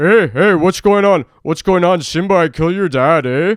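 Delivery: put-on Canadian accent. Riffing on a Canadian Lion King, voicing the villain, Scar with a Canadian accent. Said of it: "Simba with a Canadian accent".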